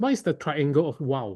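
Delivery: ordinary talk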